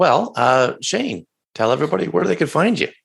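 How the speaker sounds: voice cracking and pitching up mid-line. Wrapping up an interview and turning to the guest, voice cracking. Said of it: "that was my voice cracking".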